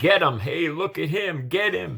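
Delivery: hostile, high, angry jeering like crowd cries. Retelling how a crowd reacted when the speaker took a knee: imitating people yelling. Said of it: "I heard people yelling".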